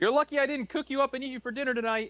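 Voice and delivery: very high, furious, angry shouting. A character yells at a horse in public. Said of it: "You can stop yelling at the horse".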